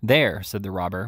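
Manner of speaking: ordinary delivery, nothing marked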